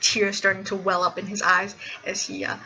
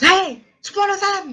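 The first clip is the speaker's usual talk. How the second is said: shrill, very high, loud yelling; 11 semitones higher, 7 dB louder than usual. Game master voicing a man who turns, spots the character entering, and yells. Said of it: "and he yells".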